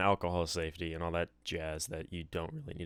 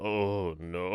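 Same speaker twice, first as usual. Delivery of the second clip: put-on gravelly, hoarse, deep voice; 4 dB louder than usual. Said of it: "speak, and I just went".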